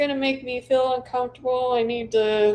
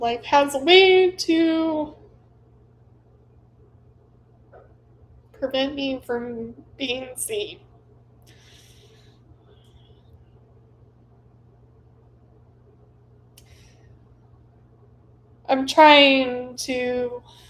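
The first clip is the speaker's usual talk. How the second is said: holding back tears, fighting them. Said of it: "I'm trying not to cry".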